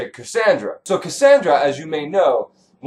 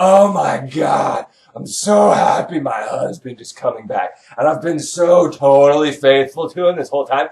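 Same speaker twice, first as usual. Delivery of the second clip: mock over-excited, way too excited gushing. Retelling Clytemnestra's words about her husband's return: imitating someone way too excited. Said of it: "way too excited about it".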